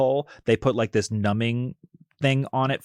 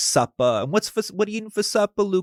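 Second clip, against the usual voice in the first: very high-pitched put-on Massachusetts accent; 10 semitones higher than usual. Imitating a mother asking about supper: imitating mother's Massachusetts accent. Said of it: "her accent's like".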